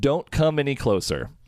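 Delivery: normal talking voice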